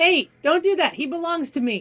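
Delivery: threatening, menacing manner. Speaking in character to the tribe's guards, who point spears at the frost giant: threatening manner. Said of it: "in a threatening manner".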